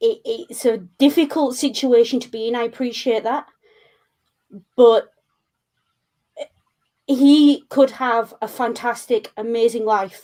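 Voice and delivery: choked-up voice, thick with emotion. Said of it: "you can probably hear it in my voice that it kinda got to me".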